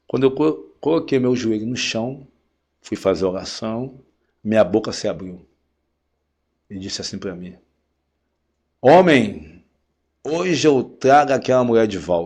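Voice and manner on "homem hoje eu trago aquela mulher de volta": deep booming voice like thunder. Man retelling the words his mouth spoke during prayer: thunderous voice. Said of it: "mas com uma voz de trovão".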